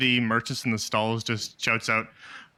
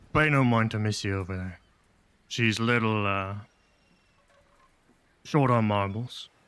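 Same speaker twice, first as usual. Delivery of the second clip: speaking in a lowered voice; 5 semitones lower than usual. The game master voices a merchant speaking to a player's character: lower voice. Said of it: "in a in a lower voice just goes".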